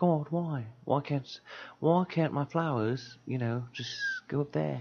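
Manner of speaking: put-on English accent. Acting out a bit for the others, in an English accent. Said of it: "You have to do like an English accent".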